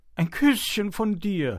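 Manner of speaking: very high-pitched, loud, begging. Kiskis, meeting a hare in a field in the morning, begging. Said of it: "bettelte Kiskis".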